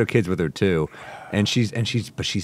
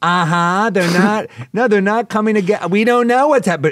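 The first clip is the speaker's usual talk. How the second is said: put-on very high, shrill, loud, tipsy older woman babbling; 13 semitones higher, 8 dB louder than usual. Retelling a loud passenger on the phone during a flight: imitating a drunk woman. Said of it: "clearly pissed drunk".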